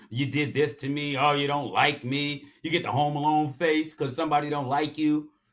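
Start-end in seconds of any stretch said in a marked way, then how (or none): none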